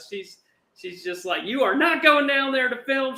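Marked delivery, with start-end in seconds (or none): 1.4-3.2 very high-pitched, shrill yell. Retelling how a ticket-booth lady turned them away, imitating a lady shouting. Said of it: "She's shouting at us".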